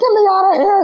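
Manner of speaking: high-pitched yelp in mock panic.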